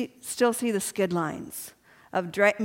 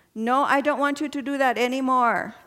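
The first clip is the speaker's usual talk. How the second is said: cute little put-on Vietnamese accent; 3 semitones higher than usual. Retelling what your neurologist says at every visit, in Dr. Nguyen's Vietnamese accent. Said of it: "in his cute little Vietnamese accent".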